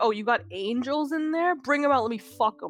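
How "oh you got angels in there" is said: ordinary delivery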